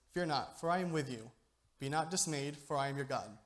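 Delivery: normal talking voice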